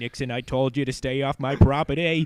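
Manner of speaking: put-on Boston politician voice. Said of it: "why I'm doing a J F K voice".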